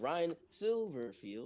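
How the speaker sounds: heavily inflected, exaggerated, dramatic delivery. Saying a coach's name after being urged to go for it: exaggerated voice inflection. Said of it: "I have to say it like that".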